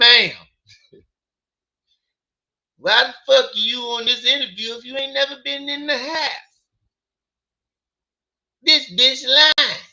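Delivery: indignant, disbelieving scolding. The speaker tries again at imitating Trey: Trey impression. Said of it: "That's my best Trey im- uh, impression".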